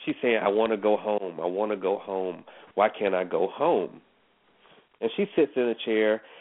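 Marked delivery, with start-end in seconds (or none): 0.4-4.0 slow, weepy, tearful voice, crying. Retelling what the crying homeowner kept saying: imitating someone crying. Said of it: "And she's crying".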